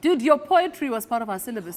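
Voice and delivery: ordinary delivery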